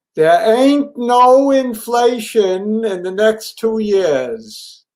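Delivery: high, full-throated shouting at the top of lungs. Declaring a market view to another speaker, shouting at the top of lungs. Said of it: "let me shout this at the top of my lungs".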